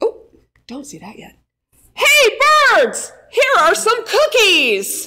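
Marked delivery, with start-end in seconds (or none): 1.9-5.1 very high, loud, drawn-out shout. A narrator reads Frog calling out to the birds, shouted in a loud voice. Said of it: "He shouted in a loud voice".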